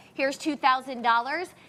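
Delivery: ordinary talk, nothing marked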